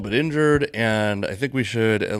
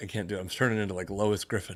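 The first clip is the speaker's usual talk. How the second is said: ordinary talk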